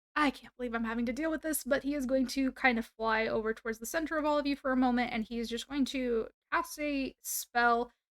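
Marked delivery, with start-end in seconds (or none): 0.2-1.7 quick, half-heard mutter under the breath. Narrating a spellcaster to the group, voicing him muttering under his breath. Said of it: "kind of mutter under his breath".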